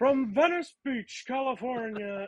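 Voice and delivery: high-pitched ring announcer call. Introducing a new challenger on the show: Howard Finkel impression. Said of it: "my best Howard Finkel impression".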